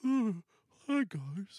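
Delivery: high, quavering, quailing, dim-witted dog voice. Imagining how the dog Tucker would sound if he could talk, quailing and dumb. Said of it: "Kind of quailing and dumb".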